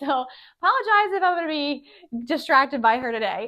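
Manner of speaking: very loud, high talking through laughter. Speaker giving seating tips, apologizing for being distracted by her cat, laughing while talking. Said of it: "I'm laughing because my cat really needs attention".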